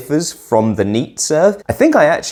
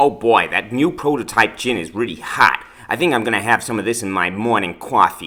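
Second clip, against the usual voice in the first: bad, fake New York accent; 3 dB quieter than usual. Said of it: "And more bad New York accents to follow".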